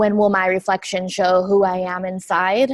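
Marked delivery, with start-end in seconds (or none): none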